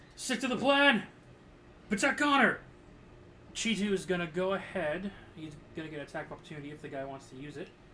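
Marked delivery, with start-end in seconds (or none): 0.2-2.6 very loud, high shouting. During a game turn, a player shouts orders at another character: yelling. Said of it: "I am yelling at".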